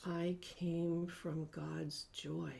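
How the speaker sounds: whispering. Repeating a vow line by line after a leader, whispering. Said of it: "Now more in a whisper".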